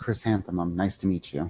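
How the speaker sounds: soft, low, hushed, quiet half-whisper. In a tabletop game, a player voices a character greeting someone, quiet half-whisper. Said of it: "quietly whisper out".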